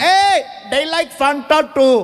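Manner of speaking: cheerful crowd yelling. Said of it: "They're yelling".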